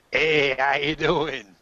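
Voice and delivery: put-on Bronx accent, high and slow. Running the game, voicing Fu Manchu as he walks in, with a Bronx accent. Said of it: "Not what I expected him to sound like".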